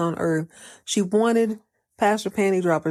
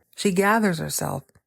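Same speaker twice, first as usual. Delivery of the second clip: ordinary talk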